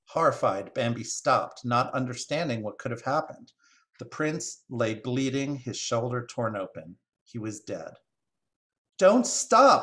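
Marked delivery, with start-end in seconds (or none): 8.9-9.8 urgent, pressing, very high and loud cry. Narrator reads Bambi's mother's line as she gallops past him, urgent cry. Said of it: "came an urgent cry".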